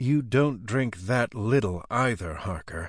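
plain

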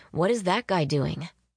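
plain

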